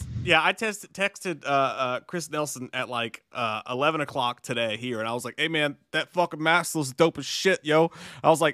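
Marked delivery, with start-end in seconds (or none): 5.4-7.9 put-on Philadelphia bully voice. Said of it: "you sound like a fucking bully in, in, in Philly".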